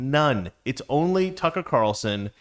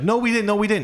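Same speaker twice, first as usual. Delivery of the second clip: put-on, high-pitched Long Island accent; 8 semitones higher, 3 dB louder than usual. Imitating Doctor Fauci denying funding the lab: Fauci Long Island accent. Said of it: "the Long Island accent".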